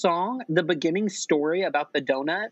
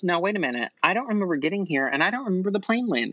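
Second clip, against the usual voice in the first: plain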